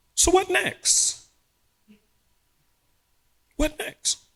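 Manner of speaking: very high, slow, cheerful put-on voice. Retelling a voice that hit the soul one day: imitating a cheerful voice. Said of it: "And it was a cheerful voice".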